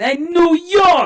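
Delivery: very high New York accent. Mocking a stock accent: stereotyped new york accent. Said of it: "there's a classic".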